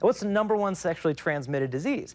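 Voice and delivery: plain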